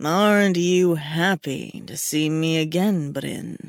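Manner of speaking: seductive, rumbling, teasing voice. A man greets the narrator again after time apart, soft seductive rumble. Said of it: "his voice a soft, seductive rumble".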